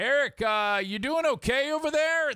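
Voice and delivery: worried, concerned tone, very high-pitched. Retelling picturing a neighbor calling up to the roof: imitating Brian's concerned tone. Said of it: "that type of concerned tone".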